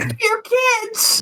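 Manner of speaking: put-on very high, unbroken sixteen-year-old voice. Retelling an open mic performance at sixteen: imitating a prepubescent voice. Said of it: "my sixteen prepubescent voice going".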